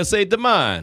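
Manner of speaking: Italian-flavored pronunciation of a word. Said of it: "like an Italian accent on it".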